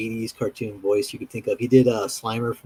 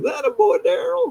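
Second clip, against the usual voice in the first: mock drunk voice, higher pitched. Retelling a background movie character's line: imitating a drunk-sounding guy. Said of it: "sound like some drunk guy".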